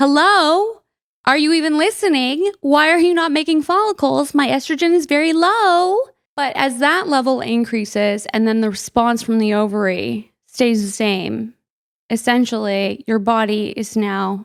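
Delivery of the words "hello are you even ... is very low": impatient, exasperated yelling, pitched high. Explaining hormones, playing the brain yelling at the ovary: mock screaming at the ovary. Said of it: "I'm screaming at the ovary".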